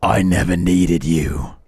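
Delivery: rough, gnarly, gravelly rasping voice. Retelling what a man said after picking up the mic: gravelly, gnarly half whisper. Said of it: "in the most gravelly, gnarly voice he could muster".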